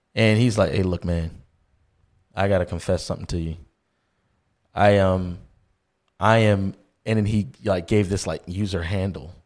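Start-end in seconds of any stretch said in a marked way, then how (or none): 0.8-6.8 acted hesitant male speech, lower pitch. Retelling how a guy approached at a party: imitating a hesitant man. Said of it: "coming up to me real weird, like, very hesitant".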